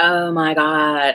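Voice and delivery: put-on valley girl voice. Describing feeling overwhelmed, the speaker puts on a Valley Girl accent. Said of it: "I have to put the Valley Girl accent on".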